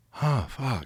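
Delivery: awestruck, stunned, dumbfounded, almost speechless tone. Retelling watching a fight with mouth hanging open: imitating own stunned reaction. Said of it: "looking at it with my mouth hanging open going".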